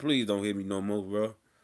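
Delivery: put-on pleading. Retelling how he begged his pops not to hit him, mock-pleading. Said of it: "I'm trying to make my pops think he killing me".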